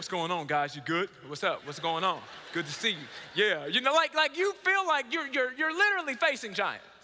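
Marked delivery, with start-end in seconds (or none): 0.0-2.9 voice deliberately pushed down deep to sound big. Retelling greeting the players at a tryout: imitating own deepened voice. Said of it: "I changed my voice that day".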